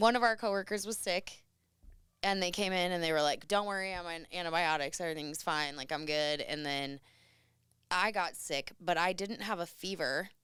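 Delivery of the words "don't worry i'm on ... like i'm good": plain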